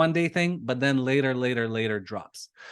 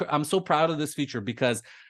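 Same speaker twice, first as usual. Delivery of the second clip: ordinary talk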